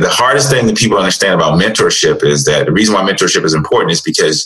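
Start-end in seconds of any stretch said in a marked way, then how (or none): none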